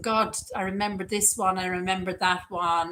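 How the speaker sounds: normal talking voice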